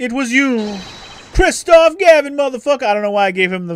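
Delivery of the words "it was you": stuck-up, superior, snooty, haughty voice. Voicing a line that accuses the former attorney: snooty voice. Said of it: "the snooty voice saying it was you".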